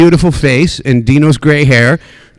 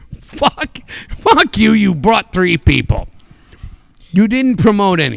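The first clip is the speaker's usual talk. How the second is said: put-on blunt promoter voice, higher; 6 semitones higher than usual. Voicing what the promoter really thinks about a comic: voicing Joey DeMarco's thoughts. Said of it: "this is what Joey DeMarco's brain is saying".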